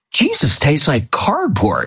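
put-on, bold, animated, swooping blurted delivery. Recounting her remark after being told it is the body of Christ, retelling a very loud remark. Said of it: "And she said very loudly".

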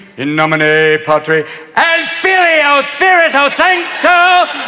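high, slow, belted showtune singing style.

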